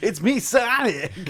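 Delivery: high-pitched, loud, belted cartoon character voice. Copying another person's signature bit before starting the game, in a Sonic impression. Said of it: "best Sonic impression".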